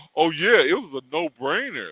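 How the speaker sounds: mock belittling delivery. Retelling how others tried to make the speaker feel stupid: imitating someone belittling. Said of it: "trying to make me feel stupid".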